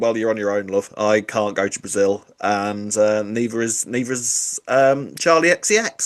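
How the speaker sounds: plain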